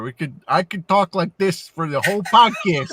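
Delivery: put-on Chicago accent. On a podcast, discussing accents with co-hosts, the speaker slips into a Chicago accent. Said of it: "do the Chicago accent there".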